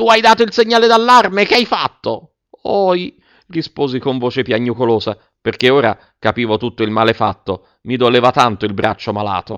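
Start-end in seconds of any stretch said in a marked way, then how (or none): 0.0-2.3 very high, angry, furious scolding yell. A man confronts the friend's son entrusted to him; shouting. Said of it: "gridò il signor Clodoveo".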